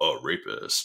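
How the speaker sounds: whispered, very gravelly, breathy, deep bass voice. Quoting the drop from the episode: Will Arnett super gravelly deep voice. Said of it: "Will Arnett, super gravelly, deep voice saying".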